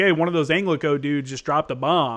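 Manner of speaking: ordinary talk, nothing marked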